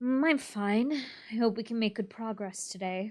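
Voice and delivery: subdued, unenergetic tone. Rehearsing a scene, answering the greeting just delivered: flat, low-energy reply. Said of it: "you get to be like, "Mm."".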